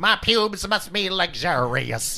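musing tone, very slow, each word drawn out. Imagining what a comedian says about his hair: Katt Williams impression. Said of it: "he's like".

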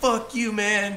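play-acted very high, shrill, loud furious yell. Speaker recounts a begging man going off on them, imitating him yelling loudly. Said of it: "he was all loud".

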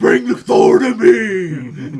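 bellowed slowly and hugely. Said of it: "diving back into his Batman voice for Gore the God Butcher".

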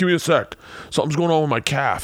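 fatherly voice. Retelling a hunt, voicing the wounded father buffalo: voicing the father buffalo. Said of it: "you see the dad like".

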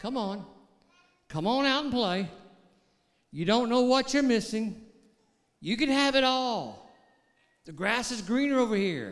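put-on tempting enemy voice. Speaker acts out the enemy speaking to a restless man, acting out the enemy tempting. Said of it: "The enemy would speak to him".

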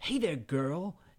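mock nerdy voice with false bravado. Imitating a movie's self-declared king of the nerds: imitating a nerd's false bravado. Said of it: "He's like that false bravado that you get".

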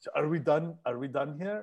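put-on Russian-accented voice, put on. Retelling what a date said to end it: imitating a russian accent. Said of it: "she was a Russian, and she had an accent".

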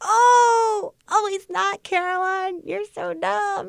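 high-pitched mock crying wail.

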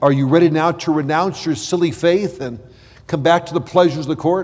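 normal talking voice

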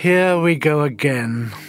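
said dryly. Reading a novel aloud, a character stares up at the scanner screen, speaking dryly. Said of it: "said Ian Chesterton dryly".

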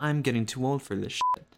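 ordinary delivery

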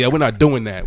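plain

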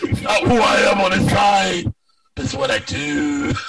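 big, loud, groveling delivery. Perform a line from the first movie for the others in a loud groveling voice. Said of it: "That's doing a loud groveling voice".

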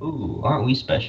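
breathy whisper dripping with sarcasm. Reacting to a remark about taking calculus: sarcastic. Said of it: "I'm being sarcastic".

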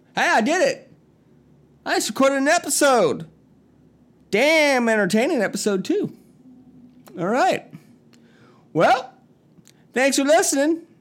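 put-on rural country accent. A podcast host signing off an episode, speaking in a country accent. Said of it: "I'm still talking in the country voice".

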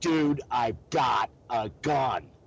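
loud, steady, no-nonsense, firm yell. Recounting yelling at a man during an incident, retelling a loud firm yell. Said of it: "in my loudest voice and believe me, with I can get loud and my firmest tone, I yell".

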